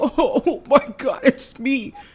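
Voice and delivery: acted, very high, very slow, drawn-out teary crying. Mocking how someone on panels acts when criticized: mock crying. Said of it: "wanna start crying and being like".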